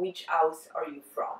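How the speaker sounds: plain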